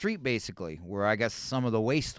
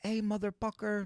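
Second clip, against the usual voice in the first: very high put-on Filipino accent, P sounds swapped; 10 semitones higher, 6 dB quieter than usual. The speaker retells how a Filipino girl used to joke with him, imitating a Filipino accent. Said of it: "That's how they pronounce their P's".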